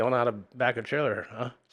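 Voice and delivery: ordinary delivery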